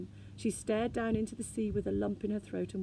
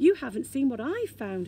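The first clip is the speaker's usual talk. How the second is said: proud, with a higher pitch; 4 semitones higher, 8 dB louder than usual. A narrator reads the Snork showing his sister what he found, proudly. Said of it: "he pointed proudly".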